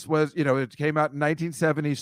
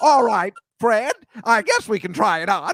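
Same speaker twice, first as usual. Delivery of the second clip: put-on scary older woman voice, higher and louder; 7 semitones higher, 5 dB louder than usual. Retelling Margaret Hamilton's line on a Mister Rogers episode: imitating Margaret Hamilton, scary. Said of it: "she's still kinda scary 'cause she's like".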